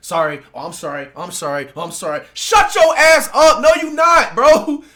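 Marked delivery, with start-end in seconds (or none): 0.0-2.2 very deep, low, sarcastic, mocking voice, repeated. Retelling how an annoying student at school keeps apologizing: mocking an annoying kid's apologies. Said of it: "they just always saying".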